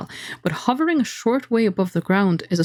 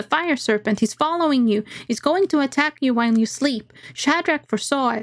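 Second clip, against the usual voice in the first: put-on high, small little boy character voice; 5 semitones higher than usual. Reading a gamebook aloud, voicing a small boy calling down: voicing a small boy. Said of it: "you spy a small boy".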